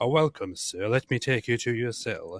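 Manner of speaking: put-on British prison guard voice. Joking about British prisons, imitating a British prison guard. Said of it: "in British prisons, it's like".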